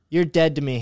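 imitated sulky man voice. Retelling how a sulking man in the corner spoke: imitating a sulky man. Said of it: "gets all sulky in the corner".

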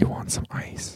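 very quiet, very soft whisper. Acting out a sewing teacher leaning close to a student: whispering. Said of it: "she just whispers in your ear".

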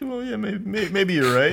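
very high-pitched, on the verge of crying. Conceding a point to another speaker, sounding close to tears. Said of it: "You sound like you're about to cry".

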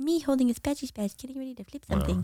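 soft, amateurish small creature voice. Repeating the meme line on request: Baby Yoda impression. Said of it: "your Yoda impression one more time".

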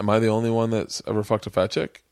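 plain

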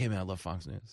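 secretive, soft, hushed stage half-whisper. Retelling how people on the street greet him: imitating people half-whispering. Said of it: "they gotta whisper".

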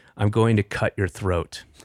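put-on serious, deadpan, menacing tone. Retelling a child's threat while staring at the speaker: imitating a serious threat.

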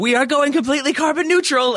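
very high, loud, crowd-rousing yell, acted out. Retelling a scene from The Office: imitating Michael Scott yelling. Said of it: "just yells out, like".

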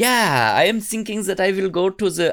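noncommittal rambling in high put-on German accent. Acting out young Billy Meier who can't commit: Billy Meier with German accent. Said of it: "I don't know why he has a German accent, but that's what I'm doing".

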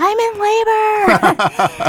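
put-on very high, swooping yell. Retelling calling to a cop behind the car while in labor; retelling a yell out the window. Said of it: "I'm like yelling out the window like".

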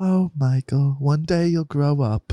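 put-on slow, drawn-out British accent. Retelling what the mother said, imitating mom's british accent. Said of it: "she was like".

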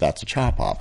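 hushed mutter under the breath. Retelling what the woman cutting his hair said about his request: retelling an under-breath mutter. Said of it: "rolled her eyes and said under her breath".

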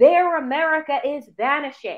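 usual speaking voice

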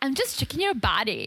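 cheeky, sassy delivery. Retelling what Elijah said on walking in: imitating Elijah's sass. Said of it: "And I love the sass".

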